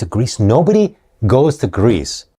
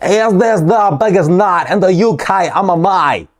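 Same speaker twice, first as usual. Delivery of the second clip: mock British accent, higher; 8 semitones higher than usual. Mimicking an interviewer's question: imitating a British accent. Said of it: "who does a better British accent than me".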